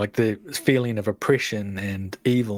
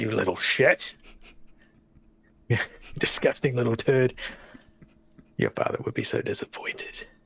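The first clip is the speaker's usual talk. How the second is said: horrible creature's sneering, contemptuous taunting voice. Voicing a horrible twisting creature that insults a character: voicing a horrible creature. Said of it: "It twists in a, like, a horrible spasm-, spasming shape, and it says".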